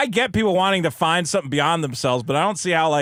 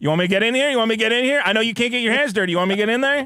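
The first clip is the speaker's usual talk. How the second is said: eager, keen tone, said repeatedly; 4 semitones higher than usual. Imitating JD Vance offering to step in as wingman: imitating JD Vance eagerly offering help. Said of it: "He's like".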